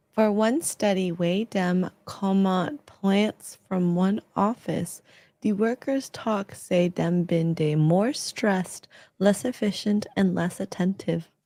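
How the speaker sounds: very slow ASMR voice. Speaking on stream, doing the ASMR voice. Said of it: "You you were literally doing the A S M R voice".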